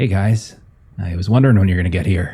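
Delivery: tinny, tin-can timbre character voice. Narrating a scene, voicing a character who greets the group in a tinny voice. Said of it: "with his tinny voice".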